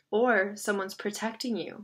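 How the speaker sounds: plain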